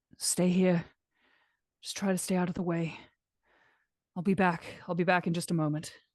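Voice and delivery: murmured, hushed, quiet voice. Speaking in character, telling someone to stay out of the way: speaking quietly. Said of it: "I would just kinda quietly say".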